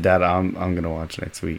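put-on fading confidence. Retelling a reply to Dad about watching next week: retelling voice losing confidence. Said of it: "my voice, like, slowly losing confidence".

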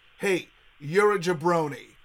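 usual speaking voice

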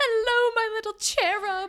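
put-on loud British accent, high pitched. Retelling a scene where Jay comes in as a nanny: imitating Jay's British accent. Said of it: "with a British accent".

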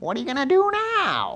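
put-on, very high, whiny, taunting voice. Quoting the devil's favorite line to listeners: whiny devil voice. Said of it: "It's actually a little whiny".

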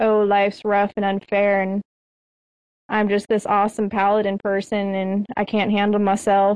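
plain

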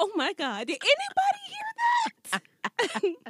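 play-acted, very high, drawn-out, swooping scandalized exclamation. Retelling hearing a curse word on television: acting out shock.

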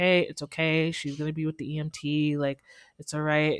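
put-on soothing voice. Retelling calming down a hysterical girl, imitating own soothing voice. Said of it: "I was calming her down".

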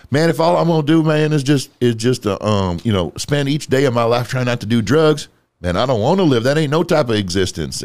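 silly put-on Louisiana accent. Quoting what a man said about living without drugs, imitate his goofy Louisiana accent. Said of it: "in his goofy, you know, Louisiana fucking accent".

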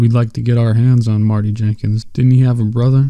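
usual speaking voice

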